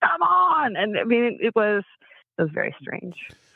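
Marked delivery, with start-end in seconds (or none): 0.0-0.8 play-acted, very high-pitched, screaming cheer. Retelling watching a team win a bet: reenacting screaming at the tv. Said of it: "screaming at my T V".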